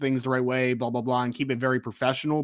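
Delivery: plain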